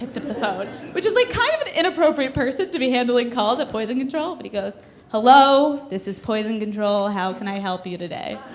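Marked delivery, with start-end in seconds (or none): 5.1-8.4 mock utterly bored, low voice. Retelling how a bored man answered the poison control phone: imitating a bored man. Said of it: "the most bored man of all time".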